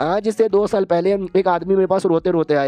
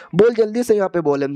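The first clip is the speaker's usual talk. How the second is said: ordinary delivery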